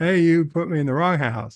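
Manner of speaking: normal talking voice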